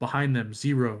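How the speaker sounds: usual speaking voice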